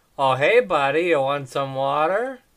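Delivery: loud, overly friendly, overly nice voice. Improvising a good-cop, bad-cop bit, the speaker plays the really nice good cop. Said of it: "That's a good cop".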